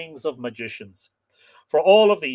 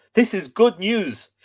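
joyful, delighted cry; 4 semitones higher than usual. Reading a tale, the narrator voices a man answering a woman's declaration of love, crying joyfully. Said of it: "Fionn cried joyfully".

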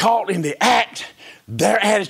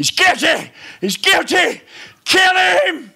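mock very high, shrill, devilish shouting; 10 semitones higher than usual. Retelling being brought before him by Satan, the speaker is imitating devils shouting. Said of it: "all his devils shout".

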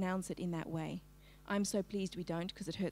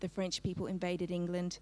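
ordinary delivery

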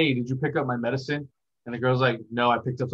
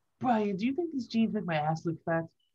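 bad put-on cartoon baby voice, higher and quieter; 9 semitones higher, 5 dB quieter than usual. Trying a voice after the other speaker's turn: terrible Stewie voice. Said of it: "I'm a terrible Stewie".

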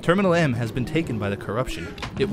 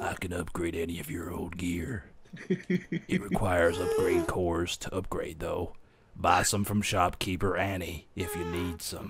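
very low, deep, hushed badass tough-guy voice; 7 semitones lower, 8 dB quieter than usual. Reading a game character's dialogue aloud in a space badass voice. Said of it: "I'm going to do like sort of like a space badass voice".

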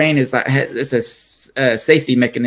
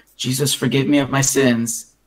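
put-on whisper under the breath. Retelling a prayer said in a checkout line: imitating whispering under breath. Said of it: "I would whisper under my breath".

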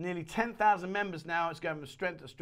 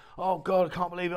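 put-on flustered, rattled outburst in full panic; 6 dB louder than usual. Acting out a flustered, panicky stranger at an airport: imitating a panicky stranger. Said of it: "really flustered and really, like, panicky mode".

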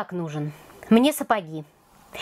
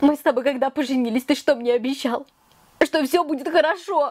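weeping, tearful complaining voice; 4 semitones higher than usual. Natasha, a wife, speaking to her husband, crying. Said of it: "ну не реви".

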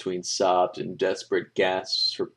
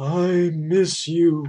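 high, loud, pained croaking voice; 9 semitones higher, 6 dB louder than usual. Narrator reads a beaten creature on camera repeating his plea, croaking. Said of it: "he croaked".

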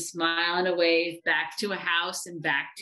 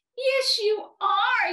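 sharp, high yelp; 3 dB louder than usual. Narrator reading Eddie's reply to the bear, yelped. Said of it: "yelped Eddie".

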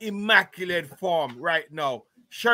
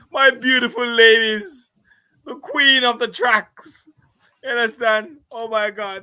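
crying with happiness, high and loud; 5 semitones higher, 7 dB louder than usual. Celebrating her race as the queen of the tracks, crying tears of joy. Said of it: "Tears of joy right now".

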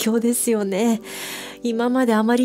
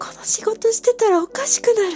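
sobbing, crying, voice pitched very high; 12 semitones higher than usual. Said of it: "戦闘力があることが分かってギャップに驚きましたが、デンジを抱えて自問自答して泣く、な".

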